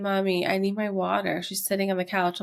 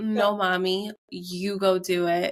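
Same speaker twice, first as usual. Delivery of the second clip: put-on sassy child voice. Retelling a child's reply telling Mommy to go do it: imitating a sassy child. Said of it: "She's sassy".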